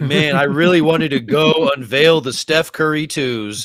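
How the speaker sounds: acted, slightly sarcastic delivery. Quoting his statement to the others: imitating a slightly sarcastic statement. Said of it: "part of it was a little sarcastic where he's like".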